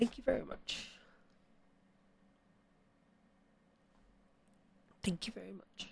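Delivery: fighting back emotion. Thanking a new subscriber on stream: emotional, trying to hold it together. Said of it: "trying to hold it together".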